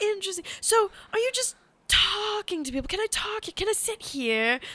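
funny, high, creepy put-on scruffy man voice. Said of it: "who speaks in a funny voice".

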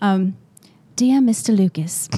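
put-on British accent. Taking turns reading a letter aloud for comic effect, Oliver Twist-style British accent. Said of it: "it's probably going to sound more like Oliver Twist".

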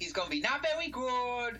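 very high, badly done put-on toddler voice.

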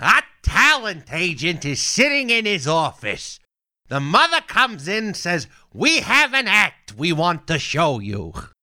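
very high put-on voice swinging widely in pitch. Sampling for the audience the aristocrats joke as Gilbert Gottfried impression. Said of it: "Little taste test of Gilbert".

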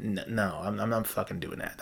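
ordinary talk, nothing marked

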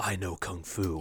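slow, drawn-out, unhurried, every word deliberate. Imitating a movie scene in the Matrix: Keanu Reeves impression. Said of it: "That was a very good Keanu".

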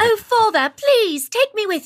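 bad fake British accent. Retelling a stage bit from the audience: bad put-on british accent. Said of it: "my accent was horrendous to an actual Brit".

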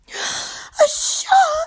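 very high, terrified shriek of dread. Reading a story, a character meets a reef shark: screaming in dread. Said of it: "she screamed".

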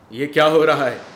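very loud, high shout projected from afar. Running up after a gunshot, two men are shouting from a distance. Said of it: "वे दूर से ही चिल्लाए".

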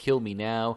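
mock ashamed, groveling pleading tone. Retelling how a character grovels on his knees: imitating a groveling plea. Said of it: "basically grovels".

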